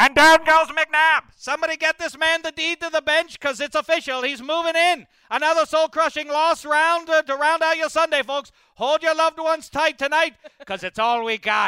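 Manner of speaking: put-on slight Irish accent, shrill booming broadcaster voice. Voicing a sports broadcaster announcing a loss: a little Irish accent as the announcer. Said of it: "Turned a little Irish as the announcer".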